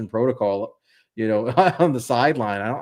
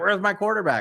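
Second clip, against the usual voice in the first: imitated scream, higher-pitched; 8 semitones higher than usual. Retelling a coach running into the medical tent: imitating someone screaming.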